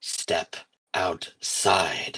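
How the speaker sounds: hushed, whispered growl. Narrating a game, a voice answers back to Kalis: growling voice. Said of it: "you hear a voice growl back".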